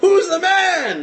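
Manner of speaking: very high screamed voice. Retelling how a man reached the other side as everyone cheered, retelling a scream. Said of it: "And he's screaming out".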